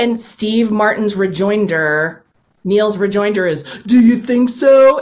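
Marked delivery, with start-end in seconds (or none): 3.8-5.0 mocking dumb voice, high, loud and raised. Retelling a film's diner scene, Neil's rejoinder to Del, imitating Neil's stupid voice. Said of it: "in a stupid voice".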